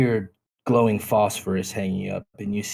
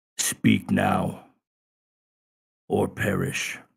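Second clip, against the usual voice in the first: gruff, rough, creaky voice of a big creature. Game narrator voicing one of the creatures confronting the party, in a large booming voice. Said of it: "you hear this large booming voice says".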